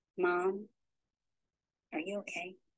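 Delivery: small, hushed, soft, quiet little voice. Speaker retelling someone at her door calling her Mom, in a quiet voice. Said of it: "a quiet voice say".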